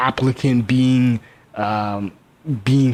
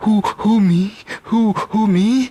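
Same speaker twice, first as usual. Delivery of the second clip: breathless stutter, very high, very slow; 9 semitones higher than usual. Acting out a flustered woman's reply: imitating a stuttering, hyperventilating woman. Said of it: "she's stuttering, hyperventilating, and she's like".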